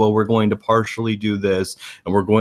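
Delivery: flat, unvaried, droning monotone. Showing how a candidate sounds talking all day: monotone voice. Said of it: "talking in a monotone voice".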